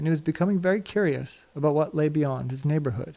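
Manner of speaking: plain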